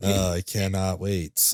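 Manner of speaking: slow, drawn-out deadpan sarcasm, sounding indifferent.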